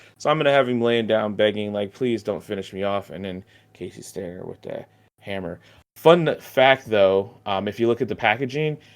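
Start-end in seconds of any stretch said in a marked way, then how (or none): none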